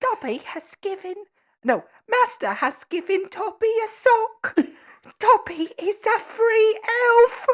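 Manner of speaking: very high, loud, put-on elf voice. Urged on by another speaker, doing a Dobby voice impression. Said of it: "Dobby voice impression".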